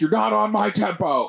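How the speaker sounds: raspy, rough, barking, high-pitched yelling tirade. Describing a clip where he yells at a drummer: imitating J. Jonah Jameson yelling. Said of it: "he's yelling at a drummer".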